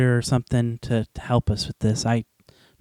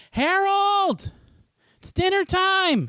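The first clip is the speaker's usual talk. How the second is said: very high, shrill hollering. A player searching a forest for Harold walks outside to call him: yelling. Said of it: "I'm gonna walk outside and yell".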